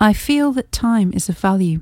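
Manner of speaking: ordinary delivery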